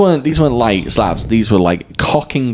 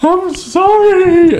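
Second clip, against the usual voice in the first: put-on very high, loud, sobbing, broken-down tearful voice; 5 dB louder than usual. Retelling being slapped and breaking down: imitating a tearful apology. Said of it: "I just broke down".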